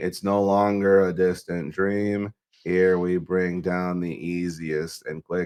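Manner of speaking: slow, flat monotone with no variation. Showing the monotone version of a line: flat monotone delivery. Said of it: "I'll show you the monotone one".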